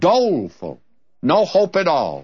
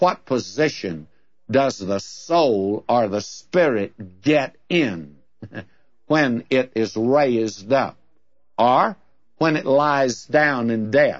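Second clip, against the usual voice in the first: low, slow, very sarcastic delivery. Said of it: "he asks in a very sarcastic manner".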